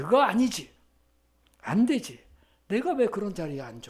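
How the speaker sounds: loud, very firm delivery.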